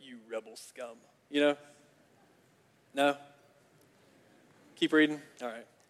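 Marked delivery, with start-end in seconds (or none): 0.0-1.0 very quiet, low, hushed, menacing sci-fi villain voice. Breaking off from a Bible reading to voice a line in a Star Wars voice. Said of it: "I hear this is like a Star Wars voice".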